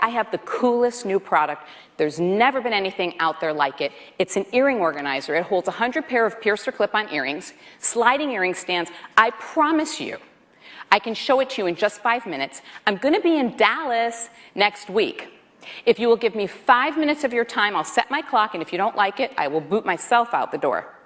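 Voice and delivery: ordinary talk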